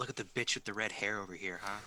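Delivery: half-whispered, hushed aside. Speaking in character to Nina during a game: half-whispering. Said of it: "I kinda whisper".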